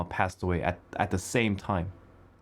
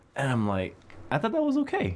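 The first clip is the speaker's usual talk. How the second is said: ordinary delivery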